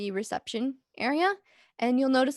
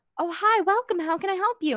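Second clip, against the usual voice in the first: upbeat, chipper, pitched-up professional customer-service voice; 7 semitones higher than usual. Voicing a receptionist greeting two players: professional, chipper voice. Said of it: "her voice seems a bit more professional, more chipper".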